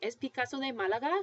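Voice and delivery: question tune climbing on Málaga. Teaching Spanish questions that express disbelief: rising intonation at the end. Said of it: "So your voice is going to go up. That's the rising intonation".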